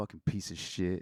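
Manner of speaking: put-on muttering under breath. Retelling what another person muttered while walking past: imitating muttering under breath. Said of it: "under her breath".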